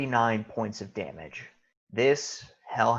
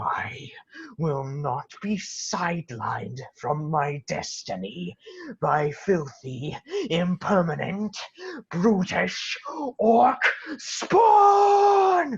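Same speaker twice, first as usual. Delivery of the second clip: enraged villain voice, higher; 8 semitones higher than usual. Voicing an enlarged prince who threatens a player: angry prince character voice. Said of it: "suitably enlarged and angry, looks at you, Shuprit, and says".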